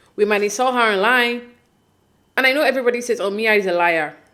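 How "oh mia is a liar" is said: ordinary delivery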